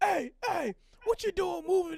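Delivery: rude, obnoxious, jerky voice. Retelling what a cop at a traffic light said: imitating a rude cop. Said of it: "the cop was being an asshole".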